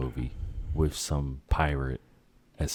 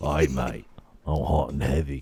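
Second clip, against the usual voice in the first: put-on Australian accent, slower; 4 dB louder than usual. Speaker mimics Karl Urban while describing him, in an Australian accent. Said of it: "put an Australian accent on a guy".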